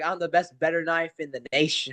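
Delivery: ordinary delivery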